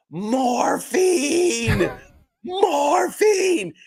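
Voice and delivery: repeated, very high scream. Recalling being badly hurt, screaming at the man treating him, retelling a scream. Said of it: "I'm screaming at him".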